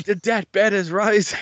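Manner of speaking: put-on screaming commentator voice. Retelling a wrestling match moment: Mike Tenay screaming. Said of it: "Mike Tenay is just screaming".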